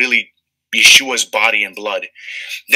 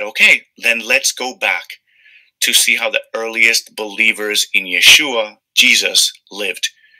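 ordinary talk, nothing marked

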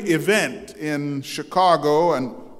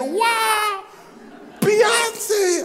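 mock very high thrilled squeal, gleeful cry with long "wow". Retelling a son's reaction at a celebrity event: imitating son's excited glee. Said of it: "stood up with much excitement and glee and said".

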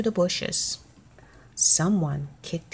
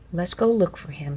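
ordinary delivery

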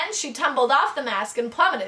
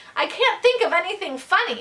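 desperate, pleading voice with raised pitch; 6 semitones higher than usual. Urged by the professor to keep it up, he answers desperately. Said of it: "said Ben desperately".

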